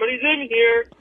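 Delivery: put-on, faked disguised voice. Retelling calling out from a bathroom stall in a really deep put-on voice. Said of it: "a really deep".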